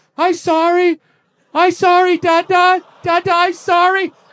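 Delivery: put-on very high, weepy, crying little-kid voice. Father retelling his two-and-a-half-year-old daughter's apology, imitating a crying toddler. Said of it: "comes running into the kitchen with big tears in her eyes".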